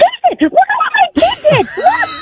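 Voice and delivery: very high, rushed, rattled-off, swooping excited voice. A mom describes cheering at her kid's soccer games, Foghorn Leghorn crossed with Golden Girl. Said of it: "as I'm having that voice".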